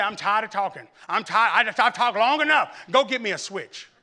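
exasperated, done-talking voice. Retelling how mother sent for a switch: imitating fed-up mother. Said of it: "turns into somebody I've never seen before".

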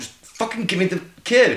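high, pressing, insistent, repeatedly urging tone. Retelling what a character kept telling another: imitating muttering under breath. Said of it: "just under his breath".

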